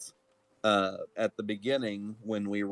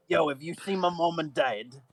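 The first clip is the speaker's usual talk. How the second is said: put-on small, high-pitched gnome child voice; 8 semitones higher than usual. Playing a small gnome child looking for his parents: small gnome child voice. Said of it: "I turned into this small gnome child looking for his parents".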